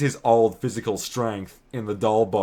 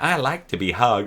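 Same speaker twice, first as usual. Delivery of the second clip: put-on regular toy doll voice. Comparing how a doll's line is voiced, imitating a regular toy doll voice. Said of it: "if it's gonna use the regular doll's f-, uh, voice".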